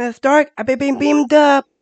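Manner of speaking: very high, a bit loud superhero voice. Asked if the impression is ready, the speaker does a Spider-Man impression. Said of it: "Do you have your Spider-Man impression ready?".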